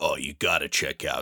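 casual, relaxed uncle voice. Retelling what an uncle who loves books says: imitating an uncle. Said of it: "this is a perfect impression of my uncle".

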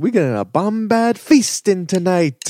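very high, swooping exclamation. Retelling Hilly announcing the feast to the Gungans, raising her voice. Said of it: "she raises her voice".

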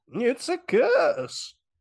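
weird, strange, very high-pitched voice. Retelling a film scene, quoting the warning of Crazy Ralph: imitating Crazy Ralph. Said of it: "It didn't sound like that, though".

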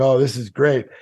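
ordinary talk, nothing marked

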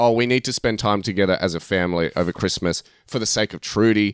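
ordinary talk

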